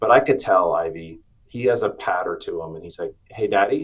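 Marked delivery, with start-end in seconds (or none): 3.3-3.8 put-on little kid voice with lilt. Retelling how the son greets him: imitating son's lilting voice. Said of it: "that little lilt in his voice".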